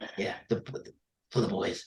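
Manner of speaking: whispered, breathy, mostly breath. Doing a requested impression of Darren Lockyer signing off the podcast. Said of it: "Darren Lockyer signing off the podcast".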